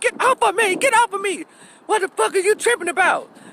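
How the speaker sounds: high, non-shrill yelling, way up high. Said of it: "they're yelling".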